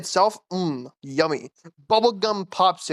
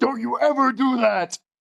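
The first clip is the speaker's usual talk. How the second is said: mock angry, high, stern scolding; 5 semitones higher than usual. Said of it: "yells at me".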